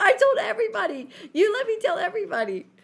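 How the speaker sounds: play-acted very high, shrill, furious shouting. Telling a party story, the speaker acts out a girl yelling at Mom, retelling an angry yell. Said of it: "she's yelling at Mom at this party".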